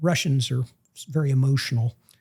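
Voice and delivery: ordinary talk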